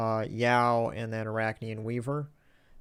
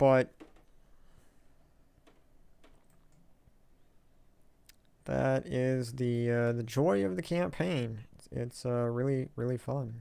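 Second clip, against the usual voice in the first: dry, sarcastic tone. Complaining about a tedious campaign task on a live stream: sarcastic. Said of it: "little sarcasm in there".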